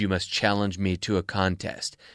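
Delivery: deep, grim, low menacing voice. Retelling a movie scene where Death issues a challenge: menacing Grim Reaper voice. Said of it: "very grim, very dark, menacing. He says".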